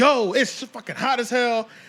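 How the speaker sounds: hyped energetic delivery. Showing how a weather video gets views, hyped and selling it. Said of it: "I'm selling it".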